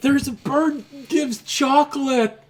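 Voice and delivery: little, high-pitched voice. Voicing a child calling after the party walking away: little voice. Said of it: "this little voice saying".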